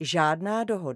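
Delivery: ordinary delivery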